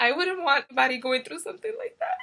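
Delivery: speaking through tears. Talking about a topic that is very sensitive to the speaker, crying. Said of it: "I'm sorry. I cry so much".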